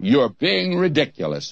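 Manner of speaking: put-on scornful, disdainful British accent. Retelling a man's retort to him, imitating a disdainful British voice. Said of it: "in that British disdainful voice".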